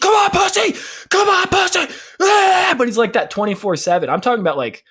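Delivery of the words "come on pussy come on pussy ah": very high, drawn-out, taunting rage yell. Describing a streamer flexing his muscles: imitating tilted Tyler1 yelling. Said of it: "Tyler one's just all tilt".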